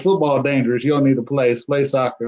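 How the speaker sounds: usual speaking voice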